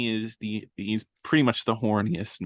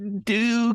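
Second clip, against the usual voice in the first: awful, terrible voice, pitched up; 11 semitones higher than usual. Retelling a movie scene where the bad guy answers: imitating the worst voice possible. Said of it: "in the worst voice possible".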